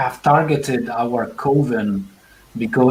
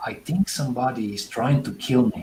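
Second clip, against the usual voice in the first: low, hushed, confiding lowered voice; 5 dB quieter than usual. A woman confides to the listeners, speaking in a lowered voice. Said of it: "but she lowers her voice and says".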